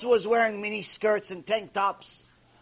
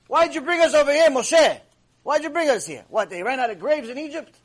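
play-acted, snide, sarcastic, mocking tone; 4 semitones higher, 3 dB louder than usual. Retelling how the people taunted Moshe: imitating a sarcastic jab. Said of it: "they were making a sarcastic joke".

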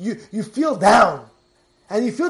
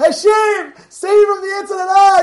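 loud screaming, pitched very high; 10 semitones higher, 7 dB louder than usual. Telling a story about an older rabbi praying, retelling a man's screaming. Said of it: "And he's screaming".

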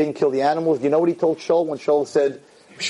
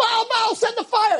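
put-on, very high-pitched shrieking scream. Telling the Eliyahu story, acting out the Baal prophets imitating people screaming. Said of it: "So they're screaming".

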